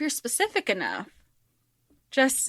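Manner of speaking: ordinary talk, nothing marked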